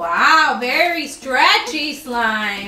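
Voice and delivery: put-on Southern American, Alabama-sounding accent. Showing off slime on camera after being asked to stretch it, Alabama-sounding accent. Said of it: "You sound like you're from Alabama".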